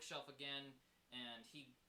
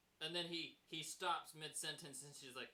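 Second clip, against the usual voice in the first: usual speaking voice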